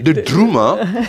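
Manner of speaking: put-on "the drummer" in Liverpool accent.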